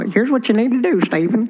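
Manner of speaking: South Texas drawl. Speaker retelling advice a woman gave him in her office, in a South Texas drawl. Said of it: "her old Texan, South Texas drawl".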